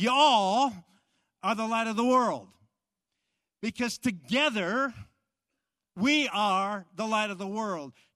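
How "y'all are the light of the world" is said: put-on loud Texan drawl, "y'all" stretched out long. Speaker explaining a plural 'you' to a community of faith, in a texan accent. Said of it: "If you were to translate that in Texan".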